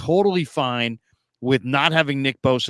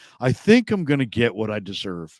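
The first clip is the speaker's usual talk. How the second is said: plain, self-assured, knowing matter-of-fact tone; 3 semitones lower than usual. Retelling a player's answer about his contract: Nick Bosa monotone voice. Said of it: "in Nick Bosa monotone voice is like".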